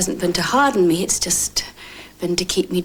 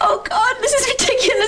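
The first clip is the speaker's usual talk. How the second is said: tearful, weepy crying in a very high voice; 3 dB louder than usual. Set off by the other speaker's emotion, crying. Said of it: "I don't know why I'm crying".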